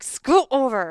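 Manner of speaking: high-pitched mock yelling. Retelling what they always yell at the dog: imitating own yell. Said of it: "I'm always yelling at her".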